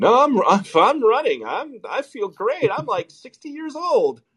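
very high, slow, stammering, stumbling voice. Retelling his answer about being replaced: imitating Joe Biden. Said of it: "and he's just like".

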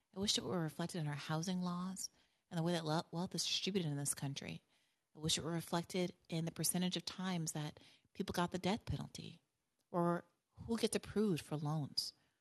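put-on compassionate tv host voice. Imagining answering a TV guest: compassionate Doctor Phil voice. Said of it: "in my best compassionate Doctor Phil voice".

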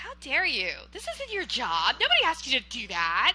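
offended, indignant woman's voice, swooping.

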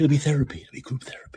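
whispering. Talking to viewers about former Bernie supporters, whispering. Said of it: "Why am I whispering?".

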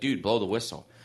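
normal talking voice

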